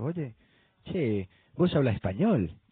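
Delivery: put-on Argentine Spanish accent. Retelling a man on a plane who spoke to him: argentine accent. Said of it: "acento argentino y me dice".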